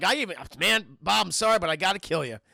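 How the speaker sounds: low, distressed, pained, upset apologetic tone. Watching a scene and imitating the Joker before shooting Bob: imitating upset Joker. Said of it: "you could tell how upset".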